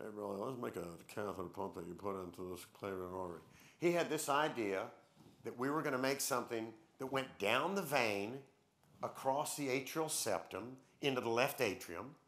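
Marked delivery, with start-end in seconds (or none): 0.0-3.4 kind of mumbling, low and quiet. Retelling how your mentor came to you with a catheter pump idea, imitating Bud Frazier mumbling. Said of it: "he kind of mumbles".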